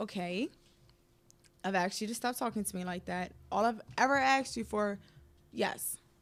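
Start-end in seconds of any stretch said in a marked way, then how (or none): none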